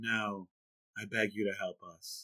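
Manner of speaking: soft, slow, level monotone with no affect. Criticizing an actress's acting in a scene, the speaker does Natalie Portman's flat monotone. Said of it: "she's just like so monotone".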